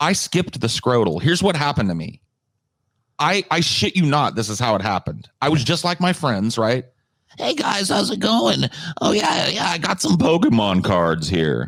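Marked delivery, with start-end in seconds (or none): 7.4-11.7 put-on very high, squeaky pre-puberty boy voice. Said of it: "it wasn't that dramatic, but it was like my voice went".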